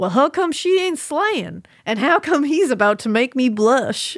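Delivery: put-on American Southern accent. Quoting what he said about someone, in a Southern accent. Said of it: "You do a really good Southern accent".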